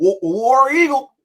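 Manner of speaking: very high, loud, twangy call. Retelling a kid calling out at a game: imitating a twang accent. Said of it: "a accent on it".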